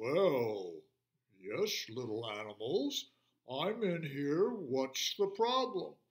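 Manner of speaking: deep, low growl with "well" drawn out. Reading a story aloud, the lion answers the little animals in Mister Lion's deep, growling voice. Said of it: "from inside came a deep, growling voice".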